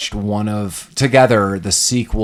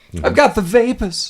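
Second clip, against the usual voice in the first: mock-swooning victorian lady voice, much higher pitch; 13 semitones higher than usual. Mimicking how a woman delivered her line, as a mock-swooning Victorian lady. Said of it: "She swooned".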